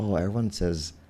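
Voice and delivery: ordinary talk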